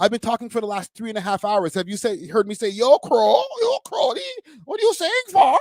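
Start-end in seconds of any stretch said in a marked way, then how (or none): 2.7-5.6 fake Toronto slang voice, much higher and slower. Saying they never talk that way, doing a mock Toronto slang voice. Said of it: "that just sounds weird".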